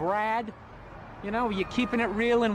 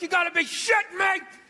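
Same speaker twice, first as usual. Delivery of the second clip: high-pitched, furious, angry scream; 8 semitones higher, 4 dB louder than usual. Speaker describes watching the game on tv at home, retelling screaming at the ref. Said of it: "you're screaming at the ref like".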